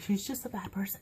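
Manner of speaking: soft, hushed, whispered voice.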